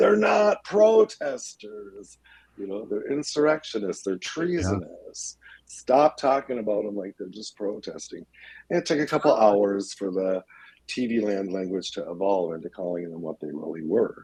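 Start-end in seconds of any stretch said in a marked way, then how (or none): 0.0-8.3 put-on, worked-up, angry, heated ranting. Recalling newscasters calling them protesters, retelling screaming at the TV. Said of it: "I'm just screaming at my TV".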